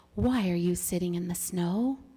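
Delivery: kind, gentle, deliberate tone. Narrator reads the silver wolf asking a bunny a question: gentle voice. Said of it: "he asked in a gentle voice".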